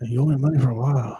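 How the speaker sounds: mock grunt whisper voice. Doing an impression of Marlon Brando: Marlon Brando grunt whisper. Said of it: "That kinda whisper, kinda, kinda grunt whisper thing".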